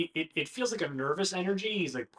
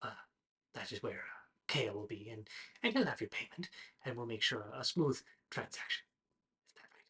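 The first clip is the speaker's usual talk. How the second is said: soft, hushed whisper under the breath; 4 semitones lower, 8 dB quieter than usual. A character in an acted scene speaks to the group: whispering. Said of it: "he whispers".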